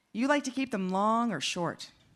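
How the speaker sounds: ordinary delivery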